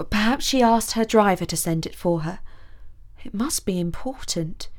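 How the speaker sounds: ordinary delivery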